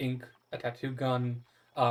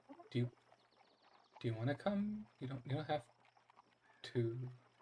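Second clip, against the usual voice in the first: soft, quiet, under-the-breath half-whisper; 8 dB quieter than usual. Voicing a character who quietly asks a player to come: half-whispering. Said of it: "whispers to you".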